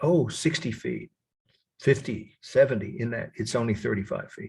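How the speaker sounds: plain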